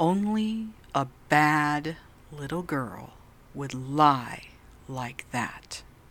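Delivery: stern, slow, deliberate, each word pressed forcefully. Recounting what a stern old man leaning over her bed said; imitating slow, forceful speech. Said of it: "said very slowly and forcefully".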